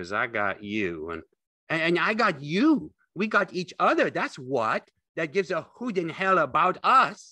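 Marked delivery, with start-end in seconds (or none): 2.0-7.1 very high, loud, triumphant cry. A man joins in as his friend tells about them, crying out in triumph. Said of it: "Lenny cried in triumph".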